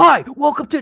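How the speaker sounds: piercing, very high, very loud shout. Describing the drive-through AI greeting late at night: retelling a loud shouted greeting. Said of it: "it will very the A I will very loudly shout at me".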